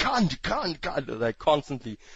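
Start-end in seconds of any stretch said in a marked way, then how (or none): 0.0-1.1 mock furious scream, repeated over and over. Describing a character who constantly screams one word, mock-furious character screaming. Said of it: "He's like basically incredibly pissed off and shoots everything".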